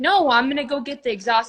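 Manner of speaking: acted-out scream. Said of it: "screaming at each other".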